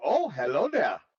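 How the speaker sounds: put-on Swedish-sounding accent. Playing a character greeting a scared man, swedish accent. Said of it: "Levi's not Swedish".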